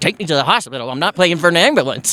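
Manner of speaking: ordinary talk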